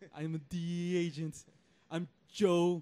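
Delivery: put-on loud, booming, slow speech in Austrian accent. Joking about an actor playing Americans: Schwarzenegger impression. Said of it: "He never attempts to even hide his accent".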